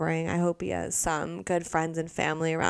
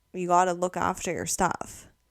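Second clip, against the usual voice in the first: put-on stern voice. Retelling a ferry worker's warning: imitating a stern father figure. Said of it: "he's like a stern father figure".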